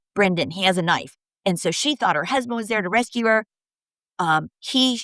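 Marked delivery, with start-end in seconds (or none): none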